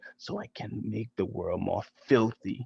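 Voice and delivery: very quiet, low, hushed, soft half-whisper. Narrator reading Mister Nasty's line as he walks away: half-whispered. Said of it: "he whispered".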